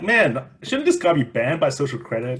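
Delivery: ordinary delivery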